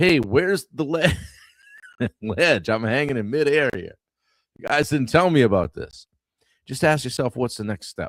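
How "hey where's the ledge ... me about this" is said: playful, joking mock alarm. Speaker recalls going off the edge on a descent: retelling a joke. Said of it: "And I even jokingly said".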